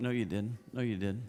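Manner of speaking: muttering under breath. Retelling a private reply to people boasting of their work: imitating muttering under breath. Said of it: "Under my breath to myself".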